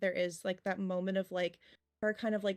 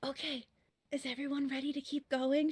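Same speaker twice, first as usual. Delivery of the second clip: small, pitched-up, shrunken-down little voice; 6 semitones higher than usual. Voicing a character who speaks so a sleeping companion stays asleep: smaller, quieter voice. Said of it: "she'll say kind of in a little bit of a smaller voice".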